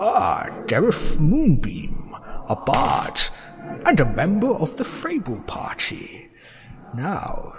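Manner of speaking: slow, drawn-out, swooping dragon voice. Voicing a grinning dragon who charms a half-elven player: dragon voice. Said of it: "holds up to his glass eye and reads it".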